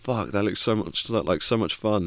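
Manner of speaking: plain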